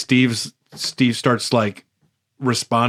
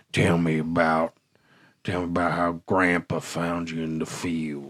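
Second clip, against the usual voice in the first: simple, low, soft southern drawl; 6 semitones lower, 7 dB quieter than usual. Retelling how a man changes his voice: low southern drawl. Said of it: "very simple, very southern drawl".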